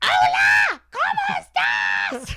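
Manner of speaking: screaming, very high-pitched, very loud and shrill. Doing an impression of a woman who screams on the phone, imitating her screaming on phone. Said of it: "this is my impression of her".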